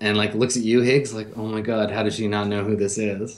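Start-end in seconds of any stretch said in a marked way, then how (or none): 1.4-3.4 put-on embarrassed voice, much lower. Retelling a meeting, the speaker acts out her friend Janie: imitating Janie's embarrassment. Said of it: "her friend Janie gets all embarrassed".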